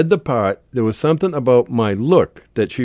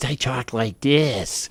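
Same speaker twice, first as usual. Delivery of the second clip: soft, slow, small little voice; 5 dB quieter than usual. Showing how the part was played to seem small: Peter Lorre voice. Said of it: "So instead of talking like this".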